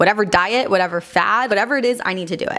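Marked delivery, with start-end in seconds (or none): none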